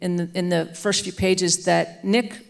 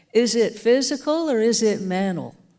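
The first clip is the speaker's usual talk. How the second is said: put-on Southern American accent; 4 semitones higher than usual. Retelling what a woman asked the trembling kids against the wall; her Southern accent. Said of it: "she would say in her Southern accent".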